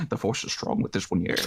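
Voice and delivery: hushed, murmured whisper, close into the ear. Retelling a woman whispering in Oz's ear, retelling a whisper. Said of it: "just like whispering in Oz's ear".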